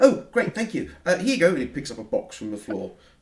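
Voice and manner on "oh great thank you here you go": very high, very loud helium squeak voice. Short alien boy thanking the crew at the door, in a helium-like voice. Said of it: "it sounds like someone on helium".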